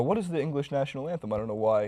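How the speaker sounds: usual speaking voice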